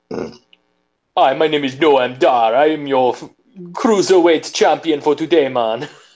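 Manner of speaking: heavy, laid-on put-on Jamaican accent. Voicing a wrestler introducing himself: Noam Dar with fake Jamaican accent. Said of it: "now he's Jamaican?".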